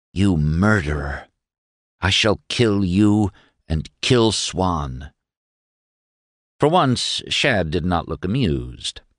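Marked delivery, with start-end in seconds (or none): 0.2-5.1 ominously, dreadfully quiet. Narrator reading Mary confronting Shad in the hall, dreadful quietness. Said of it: "said with dreadful quietness".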